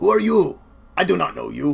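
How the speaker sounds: gruff, rough, creaky orc voice. Narrating a scene where the orc behind the shield notices you, in orc voice. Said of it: "the orc ... look at you and be like".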